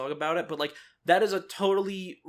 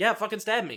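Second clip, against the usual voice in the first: put-on smug voice, higher; 4 semitones higher than usual. Describing a character daring someone to stab her: imitating smug Aranea. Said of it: "super smug about it. She's like".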